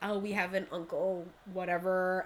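ordinary talk

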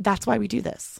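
touched and moved, feeling welling up. Recalling a guest's grateful words after a workshop, getting emotional. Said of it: "I'm getting a little emotional now".

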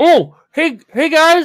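very high, loud voice through a stuffed mouth. Voicing a diner greeting the players: talking with mouth full of spaghetti. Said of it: "Wells shoves his mouth full of spaghetti".

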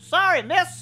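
tiny, very high-pitched little gnome voice. Voicing a gnome that fell at a player's feet: gnome voice. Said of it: "a gnome goes falling back and lands at your feet, looks up at you".

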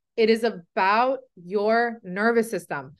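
slow, measured, deliberate, unhurried delivery. Addressing people who aren't getting results: talking slowly. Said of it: "I'm gonna talk slowly here".

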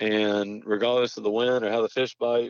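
plain

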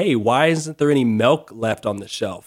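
plain

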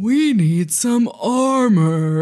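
very slow, stretched-out, drawn-out delivery. Retelling a tense action scene, imitating the agent: super slow and low. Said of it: "says it super slow and low".

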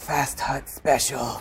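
breathy theatrical whisper. Half-whispering a secret play call to a teammate: half-whispering in character. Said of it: "So I whisper to".

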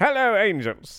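very high, projected, showy celebrity-style voice. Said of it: "I don't know why I went to [name] there".

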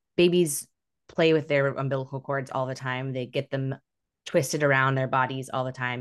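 ordinary talk

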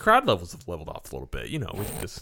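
sarcastic, ironic tone. Musing about an upcoming trip in August, saying it sarcastically. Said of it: "i say this sarcastically".

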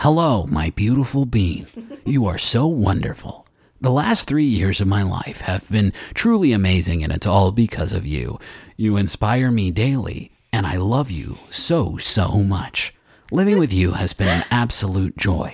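epic movie-trailer announcer narration voice. Reading out a Jumbotron message, in a movie trailer voice. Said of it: "I'm saying this in a movie trailer voice".

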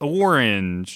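orange with heavy stress on its first syllable. Showing where the other speaker puts the emphasis: stress on the o in orange. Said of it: "The emphasis is on, is on O".

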